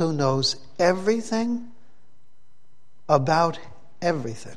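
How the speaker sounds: soft, gentle delivery with each word set apart. Speaking to the boys and girls, said slowly. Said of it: "let me say it slowly".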